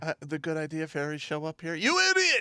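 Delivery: mock furious officer voice, yelling.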